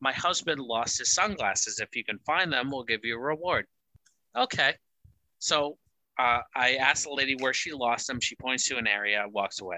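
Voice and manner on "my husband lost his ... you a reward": put-on heavy Russian accent, laid on thick. Retelling what an older lady asked him during a storm: heavy russian accent. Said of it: "very heavy Russian accent, older lady".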